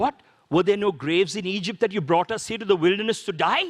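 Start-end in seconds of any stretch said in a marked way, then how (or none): none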